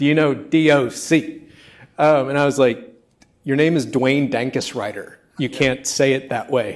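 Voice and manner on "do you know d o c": slow, unhurried put-on drawl with stretched-out words. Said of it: "he said it in like a [name] voice".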